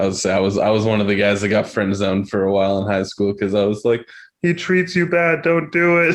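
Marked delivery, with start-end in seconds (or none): 4.4-6.2 put-on puppet frog voice, much higher, slower. Recalling being friend-zoned in high school, in a Kermit the Frog voice. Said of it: "I would do the Kermit the Frog voice".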